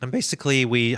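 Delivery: sudden high, loud voice crack mid-phrase. A streamer introducing a game jam project, voice cracking. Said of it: "oh my gosh, my voice cracked".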